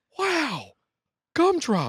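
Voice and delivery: squealing, very high-pitched, sing-song swooping exclamation. Act out Will Ferrell opening a box of chocolates, in a Will Ferrell impression. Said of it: "here's Will Ferrell like opening a box of chocolates".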